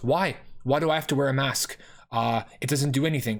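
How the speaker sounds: put-on angry outburst. Retelling how a gym friend got angry about wearing masks: imitating an angry friend. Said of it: "got angry".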